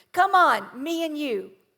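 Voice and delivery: light, mock call-out, yelled out. Retelling how the kids coordinator called from the tube: imitating someone yelling out. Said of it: "yelled out to me".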